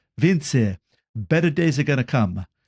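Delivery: put-on Italian accent. Quoting what a man always said when things weren't good, in an italian accent. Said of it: "he always used to say in an Italian accent".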